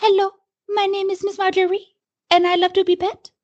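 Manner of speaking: really bad, very high put-on French accent. Giving a big fluffy cat a voice at the microphone, really bad French accent. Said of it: "I give a really bad French accent to".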